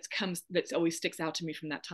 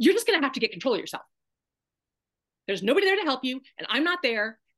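fast, high, fed-up, irritated, pissed-off tone; 7 semitones higher, 6 dB louder than usual. Retelling how she snapped at the speaker's hysterical pleas for help: mock-angry, acting her out. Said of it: "she gets pissed off".

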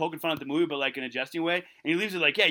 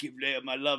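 put-on charming, much lower pitch, quieter; 4 semitones lower, 5 dB quieter than usual. Retelling what a man said, imitating a charming delivery. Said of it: "like all charming stuff".

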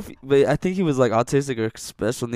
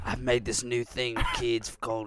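soft, half-improvised, put-on Australian accent; 7 dB quieter than usual. Riffing as a swamp-dwelling drug grower talking to kids, in a put-on australian accent. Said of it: "I don't know what this accent is. Australian, I guess".

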